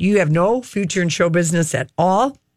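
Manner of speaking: ordinary talk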